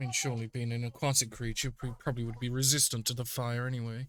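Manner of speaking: low mumble, muttered under the breath. Muttering in character while a giant frog jumps through flaming hoops: mumbling to oneself. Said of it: "Mumbles to myself".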